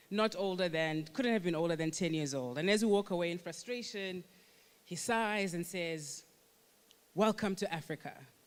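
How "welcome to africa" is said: put-on thick American accent, heavily sarcastic. Retelling a man on a plane remarking as they walk off, put-on sarcastic American accent. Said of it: "with a very thick American accent and the greatest deal of sarcasm".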